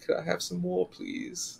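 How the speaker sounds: very soft, hushed, high, pleading, small creaky voice. Speaker recalls wanting more after Endgame ended, doing an Oliver Twist impression. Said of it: "I had the best Tiny Tim impression".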